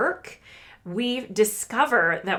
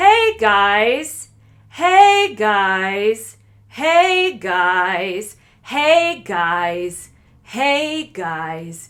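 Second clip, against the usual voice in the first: booming, slow, drawn-out guys with pitch stepping around; 10 dB louder than usual. Showing a voice student how speech pitch changes: changing the pitch. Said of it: "You can see how I'm actually changing the pitch".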